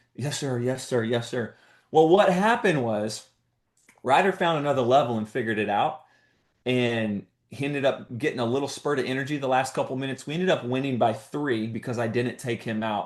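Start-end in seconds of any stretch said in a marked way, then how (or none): 0.2-1.6 put-on soft, tearful crying voice. Retelling a player's reply during a game, imitating Ryder crying. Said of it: "he's he's crying".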